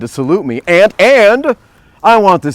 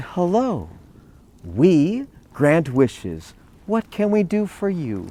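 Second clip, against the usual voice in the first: tiny, soft little voice; 3 semitones higher, 9 dB quieter than usual. Telling the story, the little red men greet Jack in tiny little voices. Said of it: "in tiny little voices".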